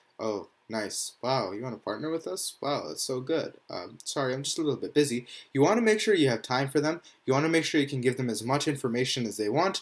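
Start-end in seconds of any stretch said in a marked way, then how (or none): 0.2-5.3 half-hearted, uninterested, indifferent and dismissive tone. Showing how not to talk to a sponsor: mock indifferent tone. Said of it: "talking to them really indifferently".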